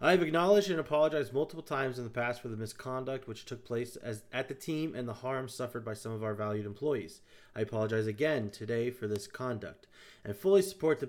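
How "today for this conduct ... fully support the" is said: normal talking voice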